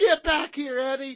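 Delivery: put-on frantic, panicked shout, very loud and high. Retelling how a son panicked and called his father back: imitating someone panicking. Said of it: "start to panic and, like, slap the table".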